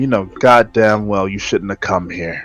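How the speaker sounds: menacing, threatening whisper. Playing a character who glares at a gargoyle: whispering a threat. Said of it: "and I whisper at it".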